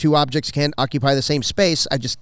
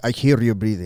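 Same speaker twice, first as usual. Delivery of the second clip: put-on Colombian accent, lower pitch; 4 semitones lower than usual. Quoting what he says to the speaker, in a put-on colombian accent. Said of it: "he says it with his like his little Mexican accent".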